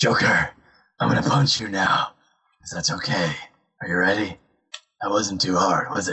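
low, apologetic hero voice. Speakers joke about an apologetic Batman, one doing a mock-apologetic Batman voice. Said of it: "apologetic Batman".

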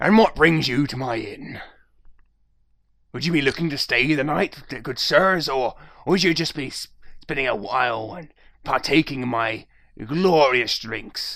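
put-on pirate voice, Scottish-Irish accent. As the pirate barkeep, greeting guests at his inn: Scottish-Irish pirate accent. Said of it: "all my barkeeps sound like pirates".

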